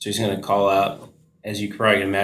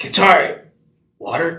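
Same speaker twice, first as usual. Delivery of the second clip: parched, very high, raspy calling voice; 9 semitones higher, 6 dB louder than usual. Voicing a character who just woke with no water: raspy voice. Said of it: "still raspy voice 'cause no water".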